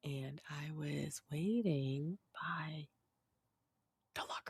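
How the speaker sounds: very soft, very slow, hushed, drawn out with pauses. Trying out drawn-out speech for listeners in real time, talking very slowly. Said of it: "You're talking real slow".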